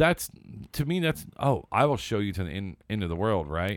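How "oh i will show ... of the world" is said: plain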